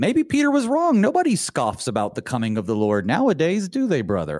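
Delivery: heavy sarcasm, swooping sing-song, tongue in cheek. Discussing a Bible verse about scoffers with another speaker: sarcastic tone. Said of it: "I say sarcastically".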